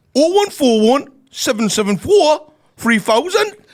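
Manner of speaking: high, loud Geordie accent. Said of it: "What's the number in a Geordie accent?".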